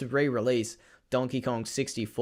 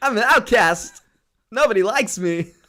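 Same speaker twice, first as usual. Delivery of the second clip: very high-pitched, very loud outburst; 10 semitones higher, 9 dB louder than usual. Acting out a son raised to talk like Christopher Walken: Christopher Walken voice. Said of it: "grew up with a Christopher Walken accent".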